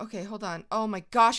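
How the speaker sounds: panicked voice. Rushing through a timed game challenge, panicking. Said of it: "I'm panicking!".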